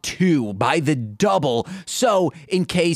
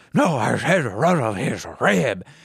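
deep, cartoon-dog-like voice; 6 semitones lower than usual. Acting out a sketch scene line by line: Scooby-Doo voice. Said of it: "And then Scooby says".

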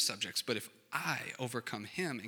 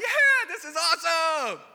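very high, loud, drawn-out, thrilled screaming; 14 dB louder than usual. Retelling coming down the giant drop ride alone: imitating own screaming. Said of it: "came down just screaming like".

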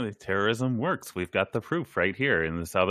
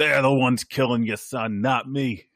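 put-on excited, worked-up voice sliding into Boston accent; 4 dB louder than usual. Describing a film scene where an actor's accent slips, imitating excited Boston accent. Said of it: "suddenly he's from Boston when he gets excited".

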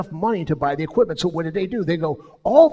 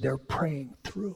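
quiet gentle whisper. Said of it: "why are we whispering".

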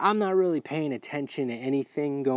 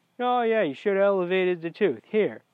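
play-acted nonchalant, breezy, offhand, slightly pitched-up tone; 5 semitones higher than usual. Retelling what the dentist said to the others: imitating someone nonchalant.

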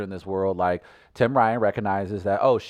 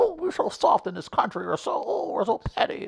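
mocking put-on voice, much higher. Mimicking people the speaker disagrees with: mocking voice of complainers. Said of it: "There's your voice".

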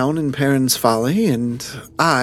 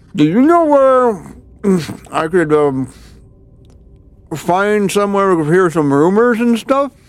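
muffled talk through full mouth, pitched up; 6 semitones higher, 4 dB louder than usual. Voicing a character asking where to hear rumors: speaking with mouth full. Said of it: "with his mouth full".

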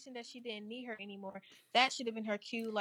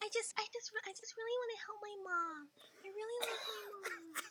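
put-on innocent childlike voice, higher and quieter; 9 semitones higher, 7 dB quieter than usual. Imitating the girl from the show, putting on an innocent child voice. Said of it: "Are you the voice actor?".

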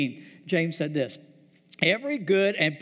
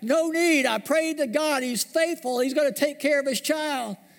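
put-on raised, high shouted yell; 9 semitones higher than usual. Telling a joke, the man on the roof yelling back to the helicopter: yelling back from a roof. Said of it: "yelled back".

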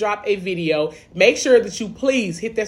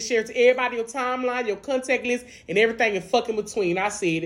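ordinary talk

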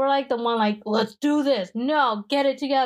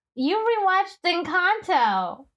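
put-on woman's voice, pitched high; 6 semitones higher than usual.

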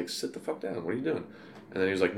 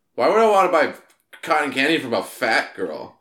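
put-on loud, high, carelessly blurted drunken yell; 7 semitones higher, 8 dB louder than usual. Retelling what a drunk girlfriend said near a young seller: imitating a loud drunk yell. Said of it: "my girlfriend yelled, like, says loudly".

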